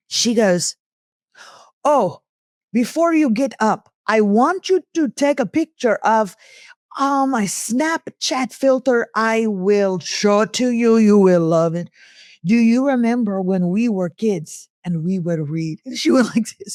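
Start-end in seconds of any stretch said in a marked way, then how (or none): 1.8-15.7 put-on Indian accent, chatty and slow. Retelling what a friend said after lunch: imitating Pauline's Indian accent. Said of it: "I'm gonna do her voice".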